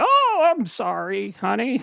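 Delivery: put-on very slow, high, swooping old-timer voice. Joking about being old someday, sitting on a nurse's lap: playing an old person. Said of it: "I'm gonna be old".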